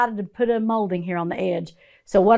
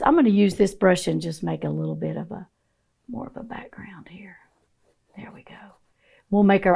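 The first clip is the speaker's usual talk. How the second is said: whispered voice; 4 dB quieter than usual. Painting weeds on camera while explaining the brush work, whispering like Bob Ross. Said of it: "I don't mean to whisper".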